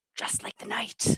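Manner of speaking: barely-there, soft, hushed whisper. Voicing a character leaping into the trees: soft whisper. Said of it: "softly whisper".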